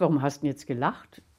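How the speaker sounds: ordinary delivery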